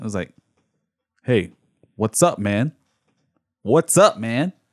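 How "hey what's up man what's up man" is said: mock aggressive, put-on delivery. Retelling how another speaker greeted a man in a seat: imitating an aggressive greeting. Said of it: "I heard the aggression in the voice".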